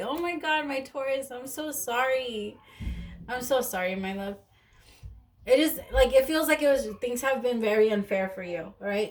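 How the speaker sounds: tearful, choked-up voice on the edge of crying. Doing a reading for a Taurus listener, about to cry. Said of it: "I'm gonna cry".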